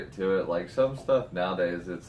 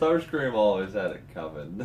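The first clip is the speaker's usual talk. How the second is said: plain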